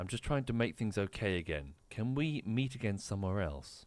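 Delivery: voice brought down low, soft and hushed. Speaking in character to the man on the balcony: lowered voice. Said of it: "I lower my voice".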